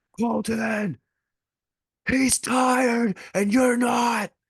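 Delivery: huge, booming, very high shout. Retelling a voice heard in a stadium during a match, retelling a booming voice. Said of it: "this booming voice".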